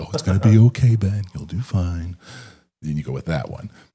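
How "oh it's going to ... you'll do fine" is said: loud, high-pitched, coddling tone. Describing a coaching persona who coddles you: coddling like Mister Rogers. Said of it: "If you wanna be coddled".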